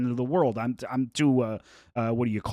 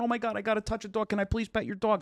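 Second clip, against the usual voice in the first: put-on crying, tearful pleading, higher and quieter; 10 semitones higher, 4 dB quieter than usual. Retelling a girl at a dog expo begging to pet a dog: imitating someone crying. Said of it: "she was crying".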